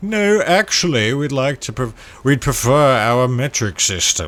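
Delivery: loud put-on British accent. Imitating Britain choosing the metric system: imitating a British accent. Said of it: "That was a very offensive accent".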